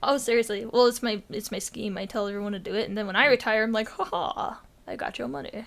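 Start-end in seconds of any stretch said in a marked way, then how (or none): 3.9-5.6 villainous, gloating, whispered delivery. Acting out cashing in on retirement: mock evil gloating. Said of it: "I'm evil, you see".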